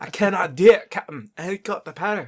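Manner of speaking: put-on loud, high, belted, terrible Scottish accent. A podcast host jokes with a co-host before welcoming listeners, awful Scotty impersonation. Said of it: "in my awful Scotty impersonation".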